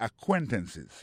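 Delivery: acquaintances, stress on second syllable -quain-. Pointing out word stress: acquaintances with stress on second syllable. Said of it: "Accent tombé sur deuxième syllabe là".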